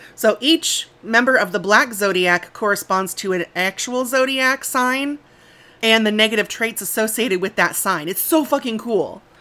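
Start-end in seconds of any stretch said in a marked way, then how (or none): 8.1-9.2 thrilled, keyed up, really excited and eager. Explaining ghosts matched to zodiac signs, really excited. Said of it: "I'm really excited".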